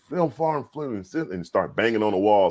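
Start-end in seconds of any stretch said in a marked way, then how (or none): 0.1-1.0 high, furious burst of angry cursing. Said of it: "he starts just cursing".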